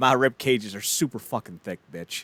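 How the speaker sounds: ordinary talk, nothing marked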